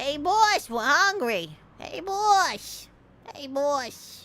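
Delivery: put-on slow, big fat rat voice, boss drawn out. Voicing a rat character calling for its boss: big fat rat voice. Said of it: "That should be the poi boy voice".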